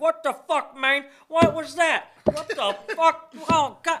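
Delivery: very high, very loud, shrill, strange voice. Retelling what a man said coming out coughing, imitating his weird way of talking. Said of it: "he talks so weird".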